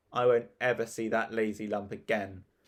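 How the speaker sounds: plain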